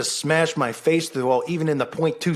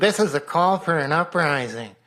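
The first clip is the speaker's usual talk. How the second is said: mocking parody voice, slower. Speaker mimics how others claim their voice sounds; mocking imitation of own voice. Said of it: "And my voice sounds like this apparently".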